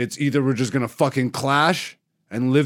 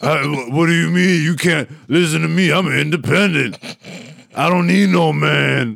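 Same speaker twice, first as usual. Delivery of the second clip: mock raspy smoker's voice, higher and louder; 4 semitones higher, 4 dB louder than usual. Imitating an older single woman: imitating a voice like eating cigarettes. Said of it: "why do you sound like you eat a pack of cigarettes".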